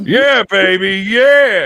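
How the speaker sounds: put-on loud classy accent, drawn-out "yeah", laid on thick. Joking with others in the chat about behaving: Austin Powers voice. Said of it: "That was good".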